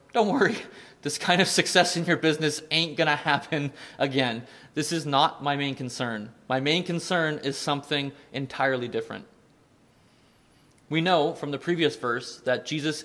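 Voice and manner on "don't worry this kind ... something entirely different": plain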